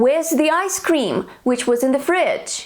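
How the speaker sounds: ordinary talk, nothing marked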